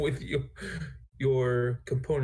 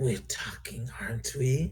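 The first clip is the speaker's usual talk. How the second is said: hoarse, raspy, high-pitched creature voice. Voicing a creature that called the group over to talk; raspy high-pitched creature voice. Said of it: "a little raspy. It's a little high pitched".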